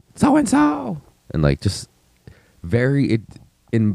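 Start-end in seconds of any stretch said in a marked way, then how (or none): 0.1-1.0 mock yelling, higher pitch. Retelling how drunk parents on the street called out: imitating someone yelling. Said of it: "yelling like".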